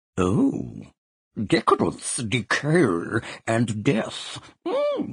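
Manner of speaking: very slow, high, swooping, trembling, grand theatrical warble. Narrator reading Peter's line, in Peter's thespian tremolo. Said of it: "in his thespian tremolo".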